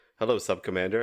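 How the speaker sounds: put-on terrified tone. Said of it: "Archer has to act so incredibly afraid of her".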